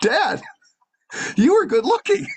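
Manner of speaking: play-acted, very high, surprised exclamation. Father retelling his daughter finding his prom photo, imitating Mariah's surprise. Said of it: "you hear the surprise in her voice".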